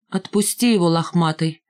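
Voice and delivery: ordinary talk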